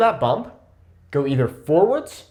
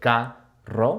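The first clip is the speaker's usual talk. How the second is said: slow, syllable-by-syllable carro. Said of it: "break up the words into syllables".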